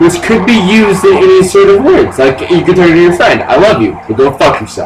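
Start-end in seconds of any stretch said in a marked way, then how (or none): none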